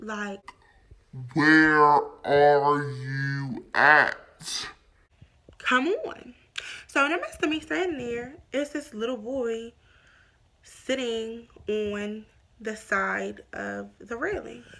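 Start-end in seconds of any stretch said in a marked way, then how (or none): 1.3-4.7 low, slow, loud, drawn-out irritated voice.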